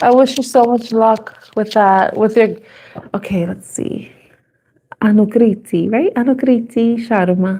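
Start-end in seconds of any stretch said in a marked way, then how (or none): 6.1-7.6 fake put-on Italian accent. Reading out a name from a question: fake Italian accent. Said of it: "I'm saying it like I'm Italian".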